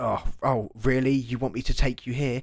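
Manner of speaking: smug, haughty, arrogant cabbie voice. Retelling how a taxi driver spoke to the family: imitating an arrogant taxi driver. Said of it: "very arrogant and very".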